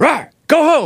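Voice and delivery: loud yell. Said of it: "my brother yelled at it".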